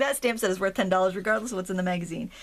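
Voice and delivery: normal talking voice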